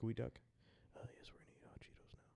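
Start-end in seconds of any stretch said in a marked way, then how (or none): 1.2-2.2 hushed, whispered ASMR announcer narration voice. Joking about eating chips on the podcast: imitating an ASMR announcer. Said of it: "I saw one where they were eating hot Cheetos".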